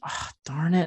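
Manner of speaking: mock muttering under breath. Retelling trying to get the Ardbeg, muttering under the breath. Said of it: "under my breath".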